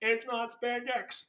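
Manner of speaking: robotic, machine-like computer voice. Quoting the computer's reply about spandex, robotic computer voice. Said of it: "The computer voice".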